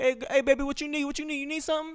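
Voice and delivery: very high, coaxing, drawn-out call. Imagining a girl walking down the street, imitating a man catcalling. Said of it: "This is what it's like to be a girl".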